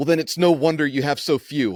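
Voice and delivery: mock spat-back tone. Retelling her reply to god: imitating a spat-back retort. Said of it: "She spits back".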